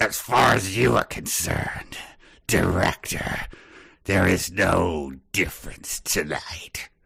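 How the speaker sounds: very slow, ominous, menacing delivery. Delivering a last line to the director in a phone scene: ominous tone. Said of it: "I have an ominous last thing to say".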